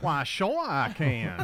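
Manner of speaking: put-on New Orleans slash foreign accent. Answering a request to do your best accent: put-on New Orleans foreign accent. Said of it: "can you do your best New Orleans slash foreign accent for us".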